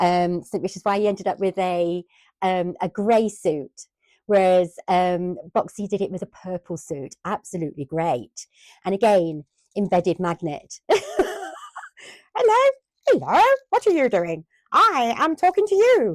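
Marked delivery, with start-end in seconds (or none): 12.4-16.1 very high, silly, swooping toy character voice. Playing with toys and voicing one of them, funny toy character voice. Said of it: "What's the funny voice?".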